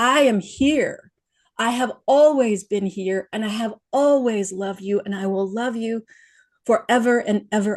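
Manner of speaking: mock, huge, booming, proclaiming woman's voice. Retelling a voice that filled their awareness from within, booming female voice. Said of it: "this huge booming female voice said".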